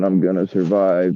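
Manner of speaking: ordinary delivery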